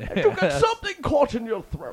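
very high, loud, choked voice.

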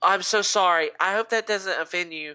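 flustered, embarrassed voice. Retelling how a woman caught herself after a remark, imitating an embarrassed apology. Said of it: "catches her like self and puts her hand over her mouth".

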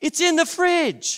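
put-on high yell, sounding distant. Retelling a voice from across the house: acting out a yell. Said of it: "yells out".

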